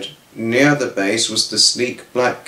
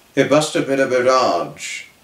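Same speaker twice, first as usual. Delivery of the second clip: ordinary delivery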